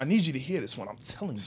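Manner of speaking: low, hushed, emphatic preacher voice. Asked to do an impression of your pops, imitate him doing the pastor. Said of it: "do an impression of your pops when he's doing the pastor".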